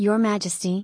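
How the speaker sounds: ordinary delivery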